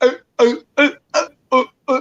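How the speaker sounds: choppy, broken-up put-on speech. Retelling how another speaker sounded on a bad connection: imitating choppy broken-up speech. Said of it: "It sounded like you were talking like".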